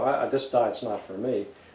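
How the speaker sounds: ordinary delivery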